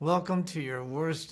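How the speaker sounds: mimicked stiff frozen-jaw speech. Retelling filming a line in the freezing cold: imitating speaking with a frozen jaw. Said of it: "That's not me gritting my teeth. That's my jaw frozen".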